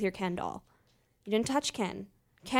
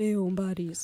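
put-on, mock-glum, depressed voice; 3 semitones lower than usual. Co-host retells how Seth first recorded the intro, imitating Seth's depressed greeting. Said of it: "Seth was all depressed".

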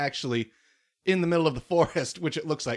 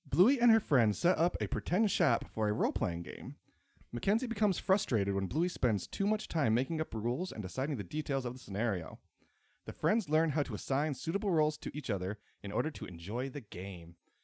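flat reading straight off the page, like a book report; 4 semitones lower, 5 dB quieter than usual. Reading an episode synopsis aloud to another speaker: reading like a book report. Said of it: "Very book reporting".

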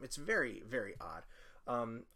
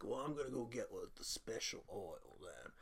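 put-on New Orleans accent; 6 dB quieter than usual. Retelling what the masseur said in the movie: put-on New Orleans accent. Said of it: "He's a New Orleans guy".

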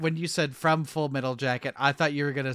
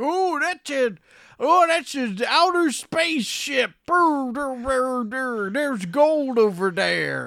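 put-on very high, grizzled old prospector voice; 10 semitones higher than usual. Reviewing a film, riffing on something landing from the sky, as an old grizzled prospector. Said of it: "an old grizzled prospector being like".

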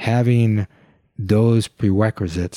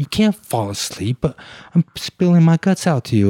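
mock frustrated, heated, high angry voice; 7 semitones higher than usual. Retelling complaining to a partner who was falling asleep: retelling own angry words. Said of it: "And I started getting angry".

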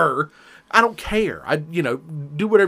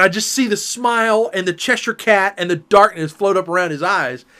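normal talking voice

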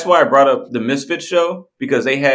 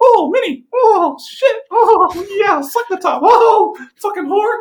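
voice going way up high, slow. Speaker demonstrates doing a cartoon voice during sex, Mickey Mouse voice. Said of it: "doing Minnie or Mickey Mouse's voice".

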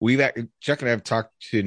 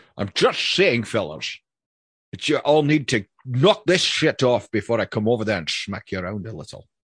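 put-on Scottish-accented voice. Asked for a Sean Connery voice, telling people to knock it off: Sean Connery voice. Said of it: "give us to us in a Sean Connery".

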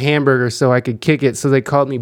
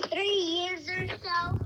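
put-on little alien creature voice, higher and quieter; 17 dB quieter than usual. Answering a guest's question as Baby Yoda: Baby Yoda voice. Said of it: "Baby Yoda, when is Sarah Jazz gonna get famous?".

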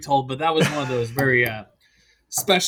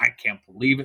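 mock really angry outburst, in disbelief; 4 semitones lower than usual. Retelling a friend's outburst, imitating an angry person. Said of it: "she's angry, like, legitimately angry".

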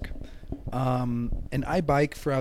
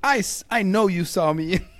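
mock furious, slow, deliberate, raised voice; 6 semitones higher, 7 dB louder than usual. Retelling arguing with the driver: imitating own angry voice. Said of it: "got so mad".

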